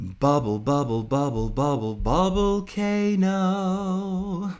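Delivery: very high, sugary-sweet, cutesy voice. Speaker greeting a viewer, then playfully repeating a word: sweet voice. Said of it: "That's my sweet voice".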